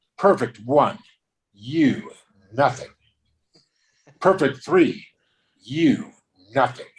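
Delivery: put-on scornful, contemptuous, disdainful announcer-like tone. Retelling refereeing a ping pong match, imitating own disdainful line. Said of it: "And I said it with such disdain".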